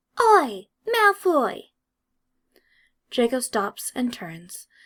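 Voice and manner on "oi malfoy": very high, sharp, shrill, squeaky shout. Narrator reads an angry character calling after another character, in a sharp, squeaky voice. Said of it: "he hears a sharp, squeaky voice from behind him".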